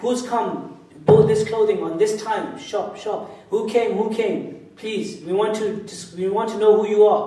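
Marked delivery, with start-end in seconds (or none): none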